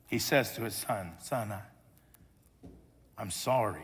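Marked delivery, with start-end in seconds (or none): 1.2-3.8 mock embarrassed, humble tone, lower and quieter. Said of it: "With humility and embarrassment in his voice".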